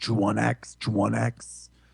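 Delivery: rough, creaky troll voice. Recalling what the unit says when you make a troll: Warcraft II troll unit voice. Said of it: "my best impression of uh, Warcraft two unit".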